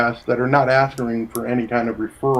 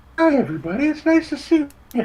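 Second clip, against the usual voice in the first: very high, put-on, fake polite voice. Mocking the fake office talk they always use, greeting everyone in a slightly too high pitch. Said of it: "slightly too high pitch".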